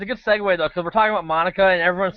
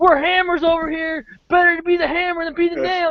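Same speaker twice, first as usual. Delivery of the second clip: put-on, very high, boastful yelling; 10 semitones higher than usual. Retelling a moment from the end of the immunity challenge: imitating Terry yelling.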